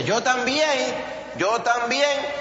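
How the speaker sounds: eager, high-pitched call.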